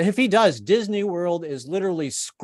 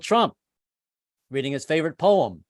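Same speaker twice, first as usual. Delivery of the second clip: ordinary delivery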